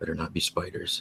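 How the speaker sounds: whispered under breath. In a tabletop game, a player voices a character whispering to himself: whispering to himself. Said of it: "Just whispers to himself".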